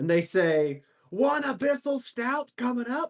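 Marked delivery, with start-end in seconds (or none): 1.1-3.1 slow, very high, drawn-out shout. Voicing a busy orc barkeeper calling out a brew name: shouting out an order. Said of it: "they just keep yelling them out".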